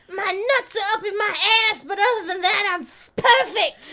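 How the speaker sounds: high-pitched, loud voice. Retelling a movie scene from the back seat: Gary's high-pitched voice. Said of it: "still talking in this high-pitched voice".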